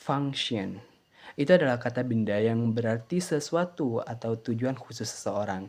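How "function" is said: "function" with first syllable leaned on. Vocabulary lesson on a two-syllable noun: stress on 'func' in 'function'. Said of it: "dengan tekanan suku kata pertama".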